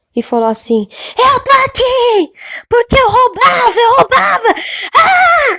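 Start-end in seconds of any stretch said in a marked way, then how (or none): 1.2-5.6 mock very high, drawn-out, desperate wailing scream. Retelling a man's cry from inside a pipe: imitating a desperate scream. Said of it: "mas aquele grito de desespero".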